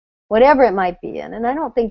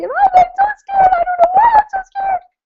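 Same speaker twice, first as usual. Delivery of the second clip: very high, awful strained voice, up an octave; 4 dB louder than usual. Explaining how a voice can jump up when not from the belly: voice up an octave. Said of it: "sometimes your voice might go up an octave".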